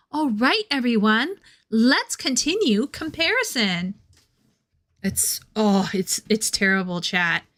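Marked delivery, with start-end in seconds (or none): 0.1-3.9 eager, animated, excited teacher voice. Streamer addresses chat to continue the comparison, in an excited teacher voice. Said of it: "I get this teacher voice and I get so excited".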